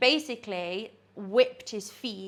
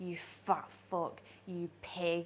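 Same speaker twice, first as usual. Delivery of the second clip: put-on sexy voice, lower and quieter; 3 semitones lower, 11 dB quieter than usual. Retelling what a woman said to a paying client: imitating a sexy voice. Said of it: "Did she say it in a sexy voice though?".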